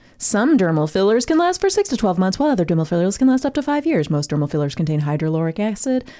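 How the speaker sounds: put-on commercial voiceover announcer voice. Reading out dermal filler facts to a co-host, imitating a commercial voiceover. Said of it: "I'm trying to sound like the voice in the commercial".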